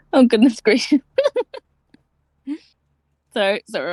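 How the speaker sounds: laughing hard. Speaker apologising mid-story, laughing hard. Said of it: "I'm laughing hard".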